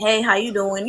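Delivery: flirty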